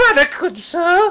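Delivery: very high-pitched, hopeful calling out. Game narrator voicing a stranger calling out to the player, in a high voice. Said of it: "calls out in a high voice".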